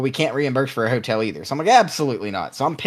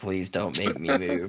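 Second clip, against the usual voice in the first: frightened pleading, lower and quieter; 6 semitones lower, 6 dB quieter than usual. Retelling being stuck overnight in an airport corner: imitating own terrified plea. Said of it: "give 'em this puppy dog look like I'm terrified".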